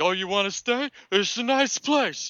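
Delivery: very high, ranting, climbing yell. Retelling a movie scene of Rocky alone in a bathroom: imitating Rocky yelling. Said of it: "he just starts yelling random stuff".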